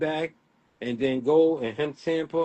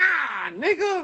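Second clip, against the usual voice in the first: put-on childish boasting voice, higher; 12 semitones higher than usual. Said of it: "he do the shit like a kid".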